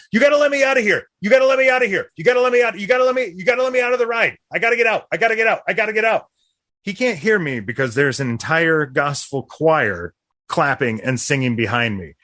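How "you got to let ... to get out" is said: shrill, very high, frantic pleading yell. Retelling a ride story, imitating someone yelling at the carny. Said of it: "yelling at the carny".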